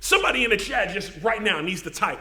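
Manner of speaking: ordinary talk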